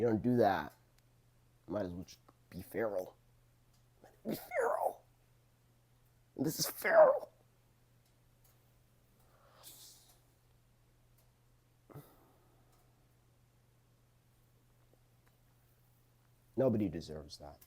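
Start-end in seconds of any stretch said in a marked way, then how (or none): 4.3-17.6 moved, emotional delivery with swooping voice. Speaker giving thoughts on a show, getting emotional. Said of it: "This is making me emotional".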